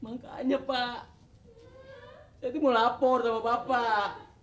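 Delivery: high, weepy, tearful crying voice. A resident reporting an inherited antique to the neighborhood head, crying. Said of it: "Kok nangis?".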